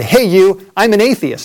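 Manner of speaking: loud, high, yelled-out taunting shout. Retelling shouting at a man with a loudspeaker from amid traffic: retelling a yell. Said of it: "I yelled out".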